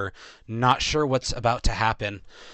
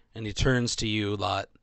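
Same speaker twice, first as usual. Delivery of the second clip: ordinary talk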